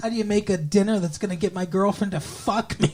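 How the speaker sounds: put-on voice of a small child. Retelling a character phoning his mom: imitating a child's voice. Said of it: "doing that in a child's voice".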